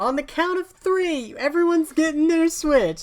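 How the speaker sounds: hyped-up announcer shout. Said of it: "I'm gonna go".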